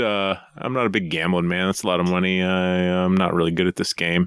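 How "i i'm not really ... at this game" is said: ordinary talk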